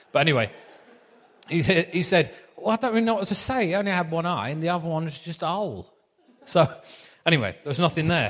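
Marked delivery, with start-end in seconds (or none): 2.5-5.9 put-on fast Essex accent. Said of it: "So I'll do the accent again".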